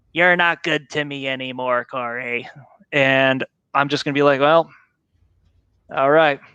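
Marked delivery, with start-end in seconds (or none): 0.1-2.4 slow, digitized, computerized robot voice. Imagining what his computer will say to him, the speaker uses a digitized robot voice. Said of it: "in a digitized robot voice".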